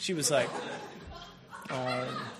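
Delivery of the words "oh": laughed out with condescending pity. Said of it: "condescending pity".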